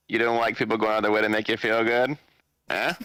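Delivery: ordinary delivery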